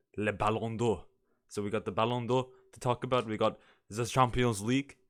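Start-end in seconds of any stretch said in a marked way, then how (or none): 0.2-1.1 French accent, slower. Listing topics to talk about, the speaker says the award name in a french accent. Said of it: "I don't know why I'm saying Ballon d'Or like that".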